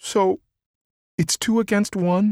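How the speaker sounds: meek, timid voice. Narrator reads a character asking timidly, all his bravado gone. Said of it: "he asked timidly".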